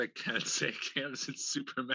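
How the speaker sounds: speaking through laughter. Apologizing to the others for laughing mid-sentence: laughing while talking. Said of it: "Sorry, I'm laughing".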